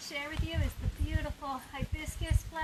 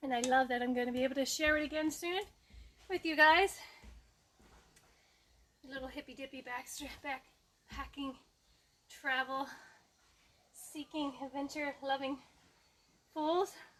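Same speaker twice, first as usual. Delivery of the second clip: winded, catching breath; 2 semitones lower than usual. Telling viewers he can't wait to see them back in Sama Tahiti: out of breath. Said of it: "that was just me trying to catch my breath".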